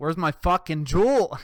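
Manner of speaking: man bellowing, very loud, demanding yell. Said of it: "He started yelling at her".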